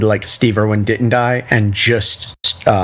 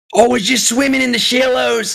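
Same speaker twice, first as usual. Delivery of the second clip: very high, creaky put-on voice; 13 semitones higher than usual. Doing a favorite impersonation of the national treasure: Steve Irwin impersonation. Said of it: "My favorite impersonation".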